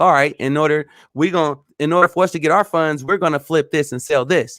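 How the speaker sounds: usual speaking voice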